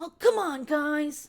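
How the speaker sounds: put-on high, loud cartoon kid voice. Speaker complains about adults talking like kids, then does the kid from Pokemon voice. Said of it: "being like the kid from Pokemon of like".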